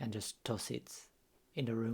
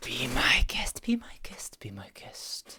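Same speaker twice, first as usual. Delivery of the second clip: drawn-out airy whisper with echo; 7 dB louder than usual. Voicing a figure in the game scene: Destiny Multiple voice, echoing. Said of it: "Like the Destiny Multiple voice, like, echoing around".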